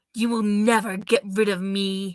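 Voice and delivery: hissing voice. Reading a story aloud as the clinging shadow speaks, hissing shadow voice. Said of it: "it hissed".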